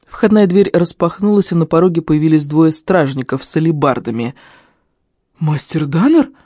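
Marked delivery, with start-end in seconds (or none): 5.4-6.3 astonished, amazed, surprised. Narrator reading a guard who bursts in and finds Master Danner, astonished. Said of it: "изумился самый здоровый из них".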